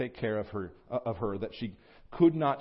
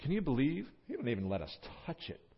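mock sarcastic, disbelieving, soft swooping tone; 8 dB quieter than usual. Explaining a woman's words about what God said, acting out her sarcastic tone. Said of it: "There's a bit of a sarcastic tone to her there".

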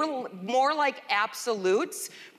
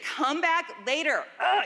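throaty, half-asleep, groggy guttural groan; 5 semitones higher than usual. Retelling the reply of a woman woken for pancakes, imitating a guttural grunt. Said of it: "like that guttural thing you give".

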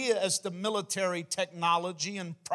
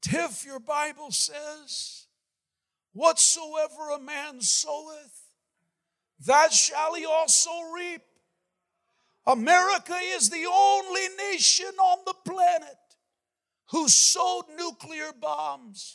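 put-on elderly voice, higher pitched; 9 semitones higher than usual. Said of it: "in his elderly voice".

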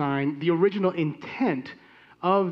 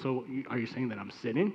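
playful joking tone, lower pitch and quieter; 6 semitones lower, 9 dB quieter than usual. Recounting turning to his conversation partner after a side comment, retelling a joking remark. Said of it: "I turned to him jokingly and said".

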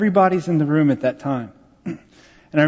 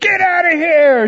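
mock furious, high, drawn-out angry scream; 13 semitones higher, 5 dB louder than usual. Retelling how a patient reacted to a visitor walking in: imitating someone screaming. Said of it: "She was screaming".

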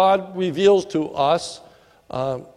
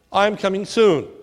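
ordinary delivery

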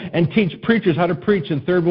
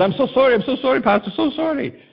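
high-pitched failed mock Zambian accent, sounding more Chinese. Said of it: "I don't think that's a Zambian accent. I think that's kind of more Chinese".

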